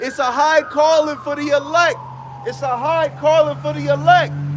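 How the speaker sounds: urgent sermon-style yell.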